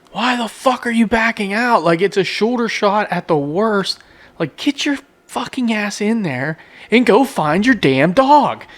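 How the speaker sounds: very high-pitched, loud screaming. Speaker retells screaming at his phone at someone backing out: retelling screaming at his phone. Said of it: "I'm like screaming at my phone like".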